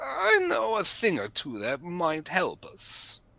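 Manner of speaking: drawn-out sing-song delivery. Voicing a prisoner proposing to escape together: Dracula-like voice. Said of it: "You went kinda Dracula there at the end".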